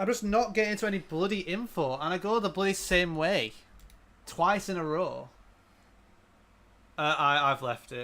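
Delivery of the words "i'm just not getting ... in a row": fed-up, frustrated, angry grumbling with raised pitch. Complaining about going the same way in the game again: getting angry. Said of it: "I'm actually getting angry now".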